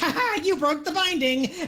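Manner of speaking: acted speech through laughter. Voicing a little creature biting a player's face: acted laughing while talking. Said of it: "he starts laughing and he says".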